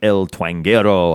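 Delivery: word pronounced the Spanish way. Host introducing this week's artist on a web exclusive, Spanish pronunciation. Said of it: "I don't know why I want to say it like that".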